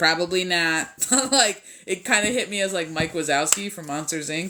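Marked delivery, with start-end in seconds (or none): 0.0-0.9 put-on dry, flat, thoroughly unimpressed and unamused deadpan. Quoting how a guy answered a question: mock-unamused flat tone. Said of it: "that's how they said it too. Like very un, unamused".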